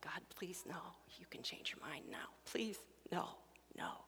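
whispered, hushed, breathy, repeated begging. Recalling finding him, the speaker reenacts the plea to God: retelling begging. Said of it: "I begged".

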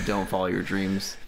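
ordinary talk, nothing marked

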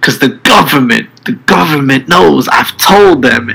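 put-on man's scream. Retelling a man screaming into his cell phone, imitating him screaming. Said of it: "he's screaming this into his cell phone".

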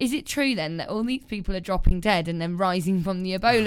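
plain

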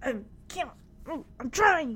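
put-on, dying wheeze. Retelling a mom's dramatic death scene as the Mouse King, imitating Kimmy wheezing. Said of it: "she's wheezing".

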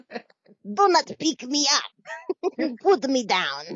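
put-on high swooping cartoon boy voice. Picturing how a tiny creature would sound, likening it to a cartoon: Dexter voice. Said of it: "That's exactly the voice I pictured".

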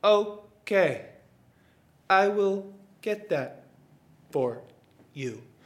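very slow, halting, broken-up sloth voice. Retelling a movie scene where a slow sloth answers: slow sloth voice as Flash. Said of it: "sees this sloth named Flash".

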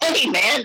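very high-pitched excited voice. Showing how the voice goes up on greeting someone unseen for long: excited voice going up. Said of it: "my voice goes up".

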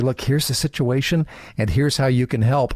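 ordinary delivery

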